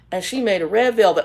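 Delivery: ordinary delivery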